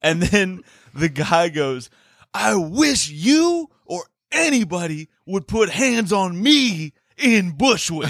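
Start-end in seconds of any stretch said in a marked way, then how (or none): 2.3-8.1 mock furious, high-pitched screaming shout. Retelling a man in a street screaming match: imitating someone in a screaming match. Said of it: "in a screaming match with".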